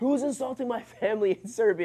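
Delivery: put-on furious yelling, angry scream pitched high. Retelling a tall player storming toward the bench: imitating Vlade Divac screaming.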